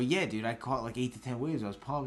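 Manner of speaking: usual speaking voice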